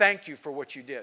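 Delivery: put-on sarcastic thankful tone. Quoting the county sheriff's newspaper article, retelling sarcastic thanks. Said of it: "He was sarcastic".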